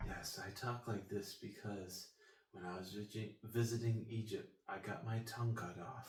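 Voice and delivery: very quiet, mild, soft-spoken voice. Recalling a cartoon documentary scene in class, imitating a very soft-spoken man. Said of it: "a like very soft-spoken dude".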